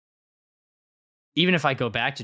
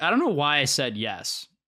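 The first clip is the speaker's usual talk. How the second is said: ordinary talk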